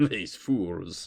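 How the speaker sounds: muttering under breath. Voicing a hobgoblin standing next to Luna: muttering under breath. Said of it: "you hear them under their breath go".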